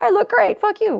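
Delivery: mock defiant, high and loud.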